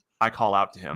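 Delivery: ordinary talk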